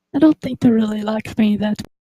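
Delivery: hushed, secretive, quiet half-whisper. Leaning over to him in character during the game: quiet half-whisper. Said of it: "whisper quietly".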